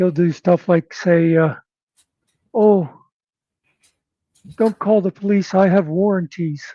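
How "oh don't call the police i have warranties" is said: put-on old grandmother character voice. Act out a man who wants to annoy people, using a grandma voice. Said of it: "he'll use like a grandma voice".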